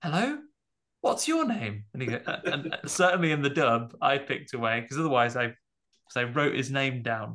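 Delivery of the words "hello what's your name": put-on English accent. Describing an English dub, a speaker quotes a character asking a name, BBC British accent. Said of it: "BBC British".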